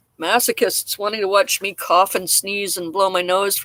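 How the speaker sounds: usual speaking voice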